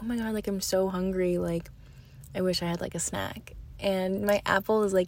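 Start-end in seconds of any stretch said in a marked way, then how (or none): none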